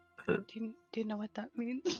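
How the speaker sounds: speaking in a whisper. Playing a character who quietly asks Davin a question: whispering. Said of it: "He whispers to Davin".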